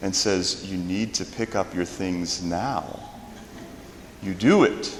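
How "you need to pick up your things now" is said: low, soft, very quiet delivery. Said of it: "gets very, very quiet and says".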